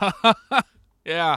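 high, loud, mocking fake ha ha ha.

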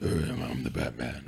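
very deep, pushed-down, throat-straining voice. Talking about the Batman movies, the speaker demonstrates it: throat-destroying Batman voice. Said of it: "the let's destroy your throat kind of voice".

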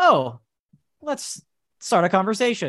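robotic, automated, machine-like voice. Talking about subtitled videos, mimicking the automated text-to-speech voice. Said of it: "the automated voice talking like this".

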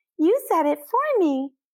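over-the-top, very high, exaggerated childish voice. Narrator reading the voice answering Lucy through the hole in the wall, exaggerated childish voice. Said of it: "The exaggerated childish voice responds".

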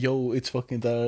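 ordinary talk

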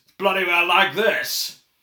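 very loud, high-pitched bellow at full blast. Correcting a name mix-up, showing how Brian Blessed speaks, booming Brian Blessed impression. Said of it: "I know the way Brian Blessed speaks".

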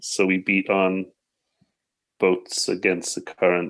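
ordinary talk, nothing marked

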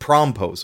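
stress on prom syllable in promposal. Explaining a new word, put the stress on prom in promposal. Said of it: "the emphasis goes on prom".

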